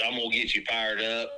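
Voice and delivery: plain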